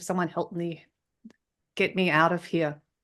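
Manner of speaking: ordinary talk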